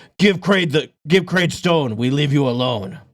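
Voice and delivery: snarled orc monster voice. Voicing an orc who snarls at Leona: orc snarling. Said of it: "the orc kinda just snarls at you".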